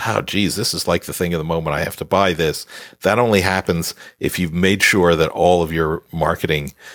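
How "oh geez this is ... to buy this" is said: ordinary talk, nothing marked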